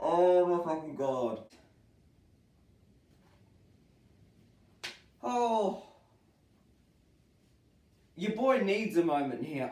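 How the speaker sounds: overwhelmed, deeply moved outburst, pausing for a moment. Speaker needs a moment over what they have been given, deeply touched. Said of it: "I'm so touched".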